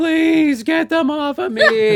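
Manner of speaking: mock very shrill, very slow, loud, drawn-out scream. Retelling a horror film patient begging, imitating someone screaming. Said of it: "like, screaming".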